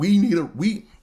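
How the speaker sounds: sudden very high pitch jump. Talking about their bills when their voice suddenly goes up high. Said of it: "My voice got high".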